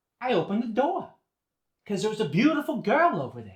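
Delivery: very loud, very high-pitched Boston accent. Demonstrating how the O R sound shifts, in a Boston accent. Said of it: "The O R sound, as in door, goes to".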